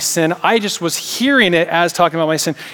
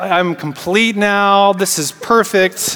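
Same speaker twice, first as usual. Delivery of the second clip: ordinary talk, nothing marked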